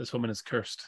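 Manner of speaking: muttered under the breath. During a tabletop role-play game, a character makes a remark under the breath. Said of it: "So I say under my breath".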